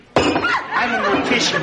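comic, very high, slow, swooping delivery.

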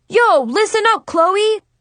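abrupt, very loud, high-pitched sudden exclamation. The narrator suddenly calls out to a girl, sudden very loud exclamation. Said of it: "I suddenly exclaimed very loudly".

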